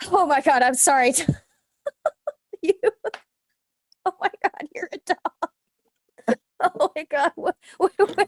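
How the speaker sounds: fast, high-pitched nervous laughing through the words. Reacting in character as someone turns into a dog: nervous laughing. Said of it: "I go from nervous laughing to".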